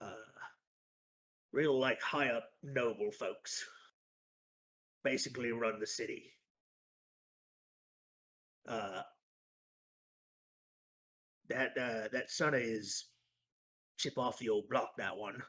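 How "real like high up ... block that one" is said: chatty, halting, rambling, gossipy grumbling. Game master voices a character describing a noble's son: tabletop NPC voice. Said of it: "Um, he kind of thinks to himself".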